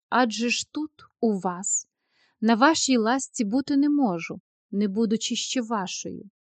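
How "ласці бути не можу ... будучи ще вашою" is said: ordinary delivery, nothing marked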